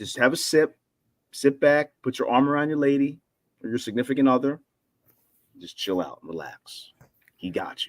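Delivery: low, deep, mood-setting DJ voice. Speaker calling a fly ball to listeners, deep voice. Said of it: "With the nice to do with the deep voice".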